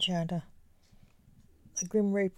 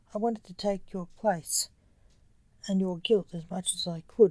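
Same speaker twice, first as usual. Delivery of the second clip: plain reading voice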